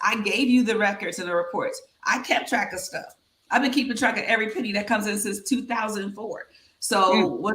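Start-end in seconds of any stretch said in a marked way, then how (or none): none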